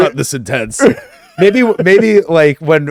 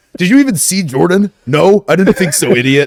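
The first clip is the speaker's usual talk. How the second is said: put-on, hot-headed aggressive rant, coming in hot; 4 semitones higher than usual. Mimicking how the co-host argued with someone, as a mock heated rant. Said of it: "you just come in so hot".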